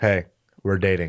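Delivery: put-on blunt flat tone. Imitating how the other speaker said it: imitating blunt delivery. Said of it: "the way he said it was like this".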